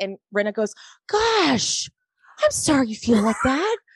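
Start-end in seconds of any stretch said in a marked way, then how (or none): 1.1-3.8 pitched-up, polite, apologetic tone. Retelling what a cast member said to another: Rinna impression. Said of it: "that was a great Rinna impression".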